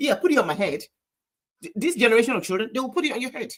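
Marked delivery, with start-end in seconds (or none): 0.0-0.8 dry, snarky, sarcastic tone. Retelling a mother's reply to her child's question: imitating a sarcastic mother. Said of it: "the mother sarcastically says".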